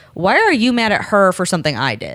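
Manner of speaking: normal talking voice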